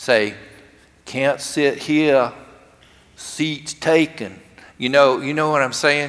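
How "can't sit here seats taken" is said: slow, overdone Southern drawl. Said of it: "little kids with an overdone Southern accent".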